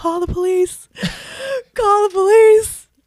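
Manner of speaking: shrill, high, loud, drawn-out tearful sobbing wail. Retelling being left without a room after a long flight, imitating own crying. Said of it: "I start crying on the street".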